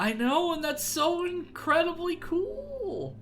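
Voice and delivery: voice breaking and cracking, shooting up high. Reacting to the GoPro shot in the clouds, voice cracking. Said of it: "I just lost my voice for a second. It cracked".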